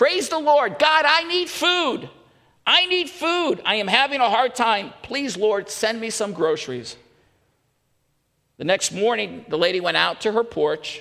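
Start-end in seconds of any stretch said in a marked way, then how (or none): 0.0-7.0 acted, high-pitched shouting. Telling a story of an elderly lady on her porch; imitating a shouted prayer. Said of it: "she stood on her porch and she shouted this".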